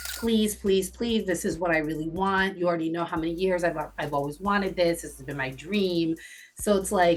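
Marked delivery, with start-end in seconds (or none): 0.2-6.2 mock pleading, begging tone. Speaker acts out a woman begging to join her friend group, imitating someone begging. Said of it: "She begged".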